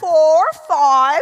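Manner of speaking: very loud attempt at a British accent. Saying a card number to a machine that kept failing, in an attempted british accent. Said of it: "I tried the British accent".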